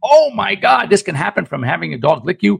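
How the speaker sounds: panicky, alarmed.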